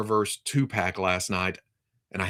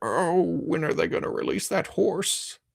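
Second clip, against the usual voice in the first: put-on creaky, high elderly man voice; 9 semitones higher than usual. Imagining being eighty years old and still waiting, put-on old man voice. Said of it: "That's my old man voice".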